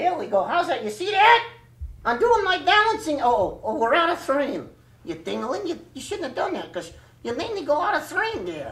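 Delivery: raspy ventriloquist puppet voice. A ventriloquist's puppet shows off its new outfit, hoarse ventriloquist puppet voice. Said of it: "Well, my name is [name], and I'm an Axtell soft puppet. ... And so that's why I sound a little hoarse right here".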